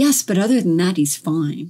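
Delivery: acted-out, swooping sarcastic voice, falsely reassuring. Describing a scene from a show, retelling a character's reply, mock-sarcastic. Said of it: "said in a sarcastic voice".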